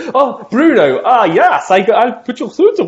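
put-on foreign receptionist voice. Speaker pretends to be a receptionist putting a caller named Bruno through, mock foreign receptionist accent. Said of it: "roped into doing impressions of receptionists from the different countries".

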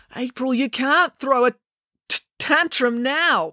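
pleading. A man pleads with someone who has plopped down refusing to cooperate. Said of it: "pleaded Joe".

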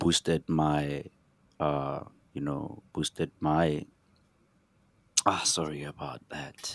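overcome with emotion, words catching and fading.

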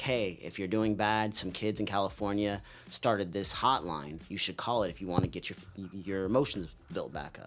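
ordinary delivery

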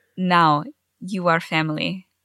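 accidental put-on Russian accent. Trying Vula's first line, slipping into Russian: accidental Russian accent. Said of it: "No, that's Russian".

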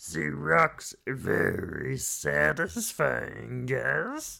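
rough, raspy alien-creature voice. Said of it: "Why do I sound like Yoda?".

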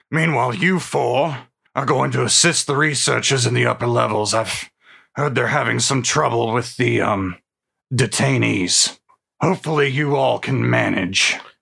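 gruff dwarf voice. In a role-play game, Captain Drillheart addresses four adventurers in a gruff voice. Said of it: "[name] Drillheart, a gruff, one-armed mountain dwarf fighter".

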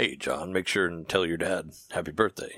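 put-on deep narrator voice. Imagining a greeting from a game's host: Leonard Nimoy impression. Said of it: "that's my best touch, Leonard Nimoy".

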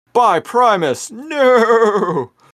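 dramatic, high-pitched, loud yelling. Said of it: "good time to yell".

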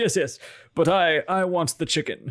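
stubborn, pressing voice. Imitating the listener insisting to a waiter: imitating Vaughn insisting. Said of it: "He's like".

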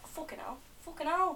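put-on northern English accent. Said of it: "It's general northern area".

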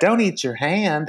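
tossed-off, offhand delivery in a trademark voice. Retelling what Bunny said, in a Lady Bunny voice. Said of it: "in that Lady Bunny, you know, voice".

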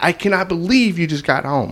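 mock screaming tirade, high-pitched and scolding. Telling a story, the speaker acts out a woman yelling at a man who just got home: retelling her scream. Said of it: "She's screaming at him".

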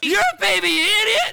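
shrill, high yell at full volume. One speaker in a group suddenly yells at another: loud shout. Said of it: "that was really loud".

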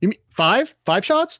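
put-on joking tone. At an airport bar, speaker recalls joking with two guys ordering shots, imitating own joking remark. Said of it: "And I jokingly go".

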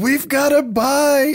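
acted, very high, very slow, drawn-out scream. Retelling a movie scene where everybody screams: imitating people screaming. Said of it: "starts screaming".

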